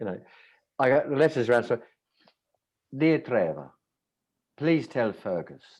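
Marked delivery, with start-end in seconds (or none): 1.7-5.6 mock Italian-accented reading. Reading out a letter from their dinner guests, in an italian accent. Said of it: "This is an Italian accent, by the way".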